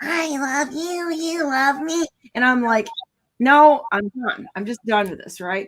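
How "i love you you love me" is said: tiny, little squeaky voice, drawn out. Asking how anyone could take her seriously: Lisa McLean's squeaky voice. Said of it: "little squeaky voice".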